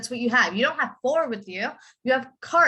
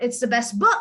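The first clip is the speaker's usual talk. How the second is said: strong main emphasis on the word book. Teaching sentence stress when the noun is new: stress on book. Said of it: "when I'm talking about the noun, you have to emphasize on the noun".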